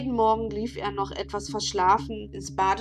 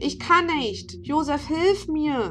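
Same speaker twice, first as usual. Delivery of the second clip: high-pitched screaming; 6 semitones higher, 4 dB louder than usual. A boy unable to open the door calls to his friend outside, screamed. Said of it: "schrie Martin".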